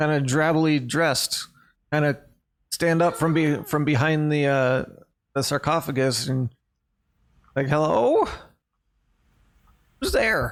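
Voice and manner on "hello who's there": put-on high, swooping little old lady voice. Narrator voices a little old lady rising from behind a sarcophagus, little old lady voice. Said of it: "you see a little old lady".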